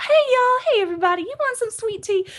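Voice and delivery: bright, happy, peppy Southern chatter, way up high. Describing how southern women greet everyone, imitating a peppy southern woman. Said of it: "they get this this natural higher voice and they get so peppy and happy".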